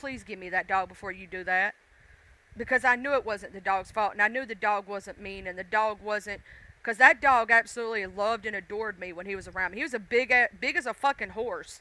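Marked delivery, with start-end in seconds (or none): 0.0-1.7 outright begging, pleading tone. Retelling how they begged the dog's owner: retelling own begging. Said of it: "I straight up begged".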